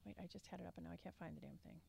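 soft mumbling under the breath. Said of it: "Can't hear you".

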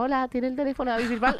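put-on squeaky, high twelve-year-old kid voice. Retelling a phone call made at age twelve, in a squeaky voice. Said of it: "con voz de pito teniendo 12 años".

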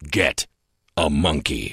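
grand, big-time showbiz announcer voice. Told to use a big-time announcer voice for the signature line: big-time announcer voice. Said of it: "use your big-time announcer voice".

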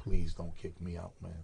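humble, soft, pleading begging tone. Retelling falling to his knees at the door, acting out begging. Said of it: "I start begging".

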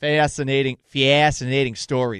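Chicago accent with very slow, drawn-out delivery. Talking about a disastrous beer night in Chicago, in a Chicago accent. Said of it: "That was my attempt at a Chicago accent".

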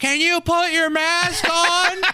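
very high, slow, drawn-out call. Retelling how a lady shouted at him down a hallway, imitating her shouting. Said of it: "shouted like".

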